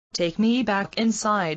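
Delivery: ordinary delivery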